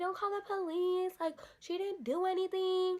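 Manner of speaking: mock crying, high, tearful pleading tone. Retelling how the sister begged not to call police: imitating sister crying. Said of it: "my sister started crying".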